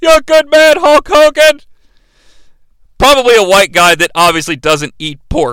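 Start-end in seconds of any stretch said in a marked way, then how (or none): 0.0-1.6 mock, pitched-up yell. Retelling a wrestling match, imitating a fan yelling. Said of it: "A random fan yells".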